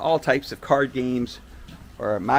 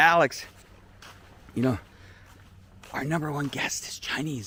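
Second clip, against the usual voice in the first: put-on, mock whispering; 2 semitones higher, 3 dB quieter than usual. Retelling what someone at a resort he visited told him, imitating a whisper. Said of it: "why are you whispering?".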